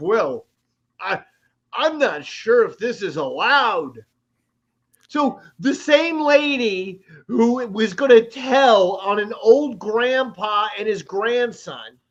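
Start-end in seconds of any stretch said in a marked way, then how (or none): 0.0-4.0 fake-innocent tone with a sharp sting underneath. Retelling what a lady at the pool said: imitating a veiled threat. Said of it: "under the guise of".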